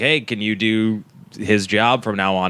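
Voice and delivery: ordinary talk, nothing marked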